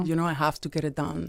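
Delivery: normal talking voice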